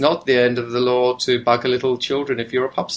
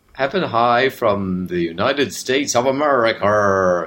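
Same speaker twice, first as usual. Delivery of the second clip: fake, put-on American accent. After a countdown, the speaker says the line in a put-on American accent. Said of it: "Do you like my accent?".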